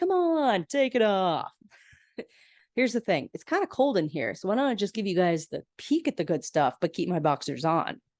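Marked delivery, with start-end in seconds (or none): 0.0-1.5 high, teasing put-on voice. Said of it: "And Phoebe's like".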